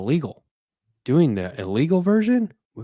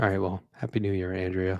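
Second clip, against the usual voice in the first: soft, let-down, deflated, disappointed delivery; 6 semitones lower, 6 dB quieter than usual. Starting the recording with a co-host, in a disappointed tone. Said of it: "you sound so disappointed".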